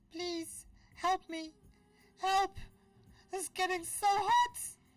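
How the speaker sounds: little squeaky voice, shrill, swooping, very high and loud. A storyteller voices someone the listeners hear calling out, little squeaky voice. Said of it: "you hear this little squeaky voice go".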